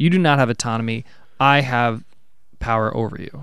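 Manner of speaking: usual speaking voice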